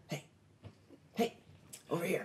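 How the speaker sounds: small, breathy, hushed whisper. A game narrator voices someone calling the players from the tower's edge; whispering. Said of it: "you hear a small whisper coming around".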